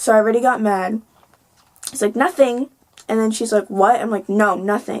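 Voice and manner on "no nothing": mock bitchy, snippy tone. Retelling brushing off a woman who asked what they were doing, bitchy voice. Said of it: "saying it in a bitchy voice".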